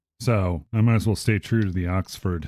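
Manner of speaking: ordinary talk, nothing marked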